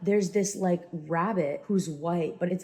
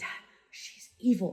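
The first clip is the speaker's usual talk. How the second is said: hushed, secretive whisper under the breath; 2 semitones higher, 3 dB quieter than usual. Retelling warning dad about the rabbit witch, retelling a whisper. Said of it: "I'm like whispering".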